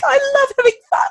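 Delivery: very high, gleeful squeal. Retelling a talk with a girl about her behaviour, imitating her gleeful squeal. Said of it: "She just squeals with glee".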